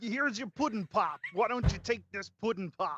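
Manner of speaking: high, robotic put-on voice. Urged to just do it after saying you can't, sound like Bender trying to do an impression. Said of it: "You sound like if Bender was trying to do an impression".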